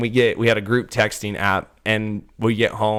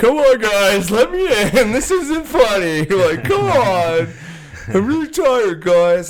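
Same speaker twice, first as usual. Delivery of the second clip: put-on very slow, very high, drunken pleading; 12 semitones higher, 5 dB louder than usual. Retelling a story about a hotel door: imitating a drunk man. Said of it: "it's this drunk dude".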